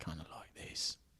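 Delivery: put-on quiet whispery voice. Showing how he would play the part: whispered Jason Statham impression. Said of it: "whisper it a little bit".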